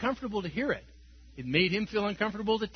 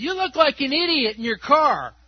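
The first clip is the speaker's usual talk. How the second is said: very loud, high-pitched hollered yell; 5 semitones higher, 8 dB louder than usual. Telling about a stranger in a parking lot, retelling a guy's yell. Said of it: "this guy yells out and says".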